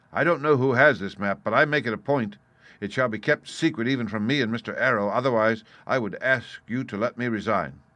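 ordinary delivery, nothing marked

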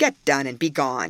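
ordinary delivery, nothing marked

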